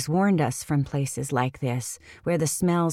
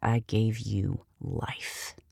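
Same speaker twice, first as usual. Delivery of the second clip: words hissed out softly, hushed; 6 semitones lower, 6 dB quieter than usual. A woman stares straight into their eyes and speaks, hissing. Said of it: "she hisses".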